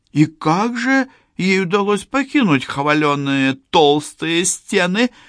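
scornful, mocking, very high-pitched delivery. Told of a prisoner's escape, she asks the messenger in a mocking question. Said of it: "насмешливо спросила она".

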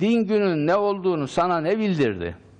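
said with emphasis.

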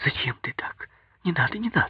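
hurried, scared, fast near-whisper. Hugging Zhenya, she pleads with Zhenya, fast, frightened, almost whispering. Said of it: "заговорила быстро, таким испуганным тоном, почти шепотом".

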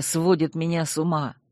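plain reading voice

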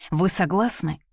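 ordinary delivery, nothing marked

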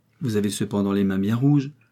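plain

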